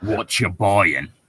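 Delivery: salesy shopkeeper patter with a faint English accent. Told he sounds like a game merchant, repeating the line as a slightly English Resident Evil merchant. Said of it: "But slightly English".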